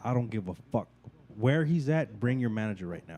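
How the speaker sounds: mock livid outburst, woman voice. Retelling a clash with a host, the speaker imitates his girlfriend getting livid. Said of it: "she got fucking livid".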